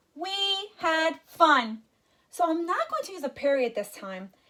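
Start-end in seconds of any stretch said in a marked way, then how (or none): 0.2-1.8 eager, thrilled, excited, pitched-up tone. Teacher showing how to read a sentence ending in an exclamation mark, excited. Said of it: "I want to sound excited".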